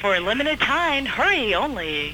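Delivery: really cool radio DJ announcer patter. Asking someone to read an ad line, showing it in a cool dj voice. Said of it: "just like in a really cool DJ voice".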